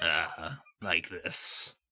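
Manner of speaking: low, gravelly, strangled character voice. Showing the others what the character Norik sounds like: Norik's choked raspy voice. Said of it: "like he's being choked currently".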